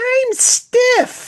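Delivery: very high-pitched, loud cartoon voice. Answering a request for a Gumby voice: high-pitched Gumby voice. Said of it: "do you have a Gumby voice?".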